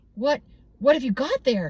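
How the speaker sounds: half keen, half suspicious. Narrator reads her question as yipping starts inside a basket, half eager, half suspicious. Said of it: "her voice half eager, half suspicious".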